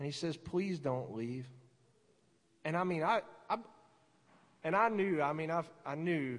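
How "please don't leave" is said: soft, gentle, tender, careful tone. Retelling how the Lord spoke during prayer: imitating a soft, gentle voice. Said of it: "He comes up really softly, gentle".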